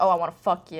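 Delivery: ordinary delivery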